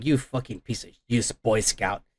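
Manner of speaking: mad, heated cursing outburst. Retelling a comic scene where Rogue snaps at Captain America: imitating mad Rogue. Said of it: "Rogue gets all mad and like".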